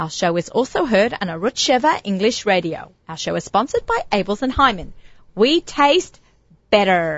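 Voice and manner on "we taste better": a slight touch of American accent. Reading the sponsor line on a radio show: slight american accent. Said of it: "I said that with a little American accent".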